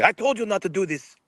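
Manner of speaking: high, mock screaming, scolding tone. Retelling how Sheik got in trouble with him: imitating someone screaming. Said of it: "Sheik started screaming at me".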